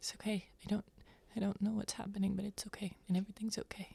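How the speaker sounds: very quiet, hushed, almost under the breath. Recalling hugging mom tight and repeating what was said to her: retelling saying it quietly. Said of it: "just like quietly say to my mom".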